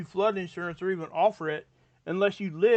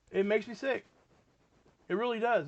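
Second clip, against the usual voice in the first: choked-up, tearful voice, on the verge of tears; 3 semitones higher, 4 dB quieter than usual. Talking about a four-year-old boy who died, tearing up. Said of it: "I'm tearing up talking about it".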